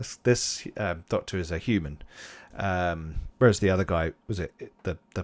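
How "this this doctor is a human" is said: ordinary talk, nothing marked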